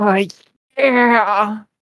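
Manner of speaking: shrill, booming, loud, high moan of pleasure. Voicing the same struck creature, moaning in pleasure. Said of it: "He goes".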